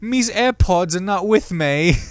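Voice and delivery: dumb fake British accent. Reading out a silly phrase as a joke, in a dumb british accent. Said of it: "This is the only way somehow I can get into a British accent".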